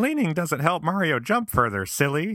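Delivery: put-on very high-pitched, childish little kid voice. Recalling the listener as a child laughing at a parent leaning during Mario: little kid voice. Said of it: "say in your little kid voice".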